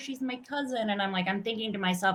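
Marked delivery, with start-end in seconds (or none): 0.0-0.9 acted, high-pitched tearful sobbing through the words. Retelling words said on a plane: imitating someone crying. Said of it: "and he's crying".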